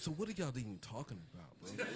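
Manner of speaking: very quiet, hushed, barely audible. Retelling what Sean asked during a basketball argument: Sean impression. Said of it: "That's how he sound".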